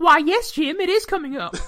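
put-on woman's voice, very high-pitched, loud. Answering a question as someone else would, imitating her voice. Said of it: "I'll just answer in her voice".

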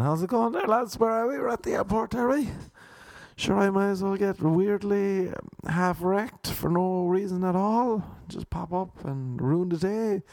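high-pitched talking-penis character voice. Acting out his penis speaking at the airport: voicing his talking penis. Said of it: "little Ponder Pipe is up piping, saying".

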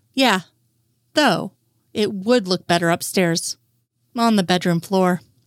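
plain

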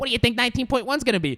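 eager, high, fast excited chatter.

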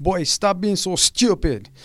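put-on very high, loud, angry scolding voice, Caribbean accent. Recalling a Caribbean kid's mom, imitating her getting mad at him. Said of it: "I always did an impression, like, when his mom got mad".

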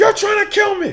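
yelling high in the voice. Retelling a man backed against the window shouting at another guy, retelling a man's yell. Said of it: "just starts yelling".

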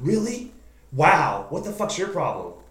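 high, loud, swooping hollering. Retelling how a woman yelled at the speaker out her window, imitating her yelling. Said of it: "she's out her window like yelling at me like".

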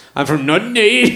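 playful Northern Irish accent. Joking about a place name, in a put-on Northern Irish accent. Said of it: "It's my Northern Irish accent there".

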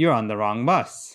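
ordinary talk, nothing marked

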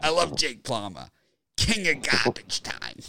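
put-on strong New York accent. Imitating a friend who loved fantasy football: imitating Billy's heavy New York accent. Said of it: "he has the heavy New York accent".

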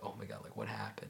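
put-on whisper. Retelling how everyone reacted at the warm-up mat area: imitating a whisper. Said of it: "everyone's just whispering".

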